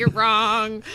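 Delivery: normal talking voice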